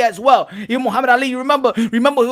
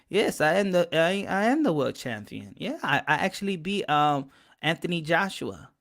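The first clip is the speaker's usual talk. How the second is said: hushed, very soft, quiet, soft-spoken voice; 6 semitones lower, 10 dB quieter than usual. Imitating a boxer claiming to be world champion: soft voice imitating Andy Ruiz. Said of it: "I got the soft voice and be like".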